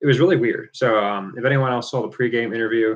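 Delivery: normal talking voice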